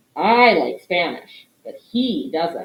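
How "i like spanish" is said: pronoun I hit hard with strong stress. Showing how English adds emphasis with tone of voice: stress on I. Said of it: "Do you hear how I really emphasize that pronoun?".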